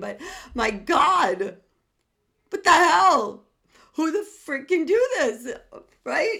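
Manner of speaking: very high, loud talk laughing through the words. Apologizing to listeners for laughing mid-talk: laughing while speaking. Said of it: "I'm sorry I'm laughing".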